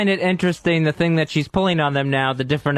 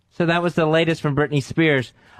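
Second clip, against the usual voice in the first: ordinary talk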